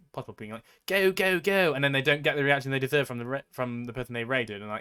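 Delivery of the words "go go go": high, exaggerated, fake-energetic, over-the-top cheering. Retelling how someone acted when raiding another streamer, mimicking their fake, overdone energy. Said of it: "I don't know why I'm giving them a British accent".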